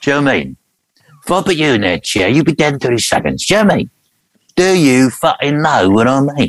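voice roughened just a little, slightly gruff. Teaching the audience the trick, addressing a man in a chair, gruff Jason Statham impression. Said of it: "gruff your voice a little".

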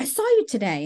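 put-on heavy German accent on every word. Quoting a grandma calling after seeing the speaker that day; thick German accent. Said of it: "she had like a very thick German accent".

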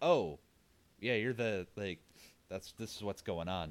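normal talking voice

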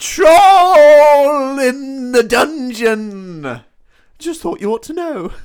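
shrill, booming, alarmed shriek, "troll" stretched out. Retelling the troll scene in a Professor Quirrell impression. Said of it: "this is gonna be a good impression".

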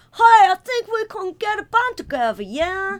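put-on loud, high generic American accent. Mocking the Americans in a TV movie shot in Sheffield, American accent. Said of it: "They're all just Americans going".

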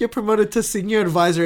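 ordinary delivery

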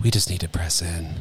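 low, put-on worship leader voice, heavy inflection. Recalling leading worship on stage while not believing it, worship leader voice. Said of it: "I go into that voice, I put an inflection in my worship leader voice".

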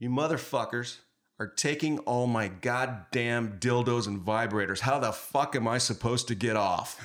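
full-on high, loud screaming rant. Speaker recalls a woman coming out into the street, imitating her screaming at them. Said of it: "She starts screaming at us".

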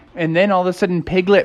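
ordinary delivery

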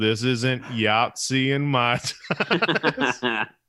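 very slow, tired drawl. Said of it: "his voice is so tired in this".

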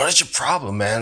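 wincing, pained voice. Voicing a wrestler hurt in the ribs, speaking where no one can hear: said under his breath. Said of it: "trying to say under his breath".

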